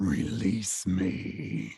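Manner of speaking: hushed, breathy, whispered growling voice. Game master voicing a voice heard inside a player's brain, growling. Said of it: "a growling voice say".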